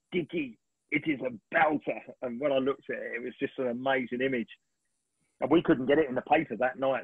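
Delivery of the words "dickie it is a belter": put-on slow, drawn-out, swooping Italian accent. Retelling what a man said after looking at the picture, in an italian accent. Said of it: "he said in this Italian voice".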